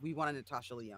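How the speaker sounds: plain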